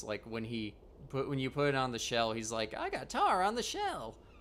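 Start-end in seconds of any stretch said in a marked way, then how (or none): 2.8-4.1 imitated enthusiasm, much higher and slower. Describing a character's different inflections, the speaker quotes his shell line, imitating an enthusiastic line. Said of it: "he says it all enthusiastically".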